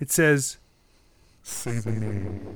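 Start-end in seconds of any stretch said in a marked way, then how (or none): 1.4-2.4 half-whispered, hushed, gnawing inner voice. Voicing a presence in a player's mind: gnawing half-whisper. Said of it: "You hear a gnawing whisper".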